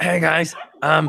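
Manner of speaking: borrowed character voice, rough and creaky. Suggesting a player do an imitation: imitating Paul's voice. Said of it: "do the Paul, Paul voice".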